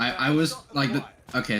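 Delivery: halting, stammering start, tripping over the opening words. Explaining oneself amid several overlapping speakers, stammering. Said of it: "now I'm stammering".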